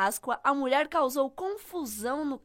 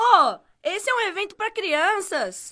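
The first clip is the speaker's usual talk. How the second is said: loud, high-pitched, slow shouting; 6 semitones higher, 7 dB louder than usual. Acting out a mother at a children's event, as asked: acted mother shouting. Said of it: "faz a mãe gritando".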